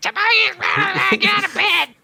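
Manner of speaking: put-on very high, very slow, drawn-out furious shout. Voicing an abusive, angry woman yelling someone's full name, angry yelling. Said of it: "yelling with, like, middle naming".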